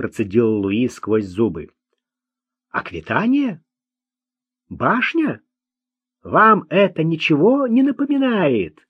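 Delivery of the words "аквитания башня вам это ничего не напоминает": astonished, wondering, surprised, high swooping intonation. Narrator reads Lucien questioning Louis and Marc, surprised. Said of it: "спросил Люсьен, глядя на них с удивлением".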